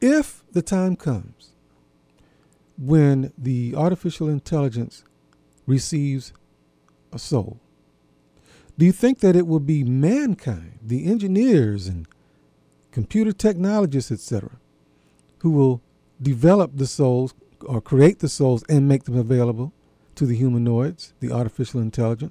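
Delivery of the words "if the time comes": slow phrase with if stressed. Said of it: "I am emphasizing the word if".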